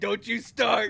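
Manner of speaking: very loud, high-pitched speech through laughter. Playing a character who slaps the table and laughs: laughing while talking. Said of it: "slapping the table and laughing".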